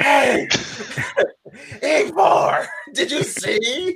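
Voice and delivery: loud, very high, botched stage whisper. A character who believes he is whispering blurts out a question, loud attempted whisper. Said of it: "But he thinks he's whispering".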